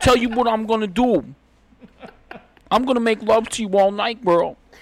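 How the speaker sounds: shrill, very loud, high holler. Joking with friends, doing a bit: Tracy Morgan voice. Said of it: "Tracy Morgan".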